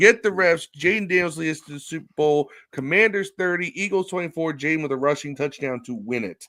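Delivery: ordinary delivery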